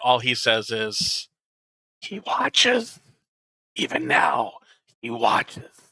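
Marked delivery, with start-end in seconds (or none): 2.0-5.6 rasping, whispered voice. Game master voices a character asked if he will cooperate, in a raspy whisper. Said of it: "in a kind of raspy, whispering tone".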